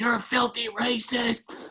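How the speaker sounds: shrill, very high, loud, drawn-out scream. Retelling how a mom screamed at her son through open windows: imitating someone screaming. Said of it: "she starts screaming at him".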